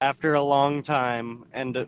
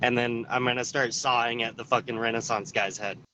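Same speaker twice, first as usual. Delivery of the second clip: ordinary talk, nothing marked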